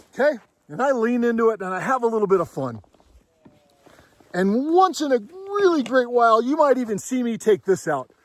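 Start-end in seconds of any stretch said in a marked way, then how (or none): none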